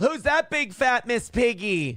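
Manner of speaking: put-on small child's voice, high and drawn out. Telling a story about a flight, voicing a little kid taunting a passenger: high-pitched little kid voice. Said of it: "some little kid in a high-pitched voice go".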